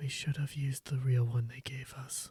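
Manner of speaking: quiet, hushed whispered aside. Game master narrating what one player whispers to another, whispering. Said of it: "also whisper to Gunner and say".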